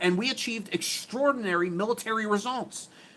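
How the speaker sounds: high, mocking, wimpy-sounding voice. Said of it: "read it in his pussy-sounding voice".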